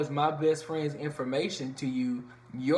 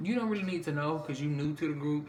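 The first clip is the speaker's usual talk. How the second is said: ordinary talk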